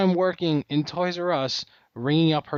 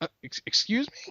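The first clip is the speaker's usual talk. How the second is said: whispered, breathy, stammered excuse me; 9 semitones higher, 4 dB quieter than usual. Retelling a reply to a rude customer, imitating own stutter. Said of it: "a little stutter".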